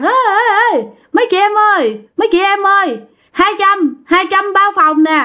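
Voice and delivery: hollering loudly, calling from a distance.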